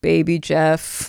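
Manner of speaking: acted despairing sigh. Retelling how the husband told the vet the cat's name, imitating a despairing sigh. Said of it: "you hear him sigh in despair".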